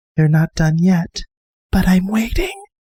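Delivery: man-sized moth creature voice. Telling a story where a moth speaks to you in a forest, in a quiet moth voice. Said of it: "a quiet voice go".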